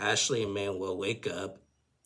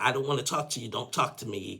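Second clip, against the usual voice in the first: put-on screaming, higher; 3 semitones higher than usual. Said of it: "Ashley just starts screaming at him".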